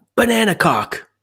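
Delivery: put-on, very high, sudden little kid's yell. Retelling what Charlie yelled running around at bedtime, imitating Charlie yelling. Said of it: "he was yelling".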